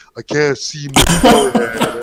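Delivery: angry, low pitch, slow and drawn out. Retelling a remembered SpongeBob clip: imitating angry Patrick. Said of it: "He's all pissed off".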